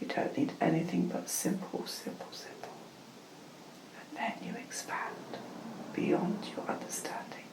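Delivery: hushed, soft, breathless whisper.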